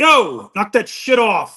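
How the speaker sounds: loud, drawn-out military sergeant bark. Retelling coming out of the office to stop catcalling: Marine NCO voice. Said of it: "I put on my Marine N C O voice".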